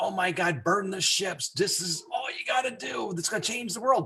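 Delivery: mock fired-up, rousing, excited voice with high pitch. Retelling how Peter pitched the business, imitating Peter's excitement. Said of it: "epitomizes excitement and inspiring".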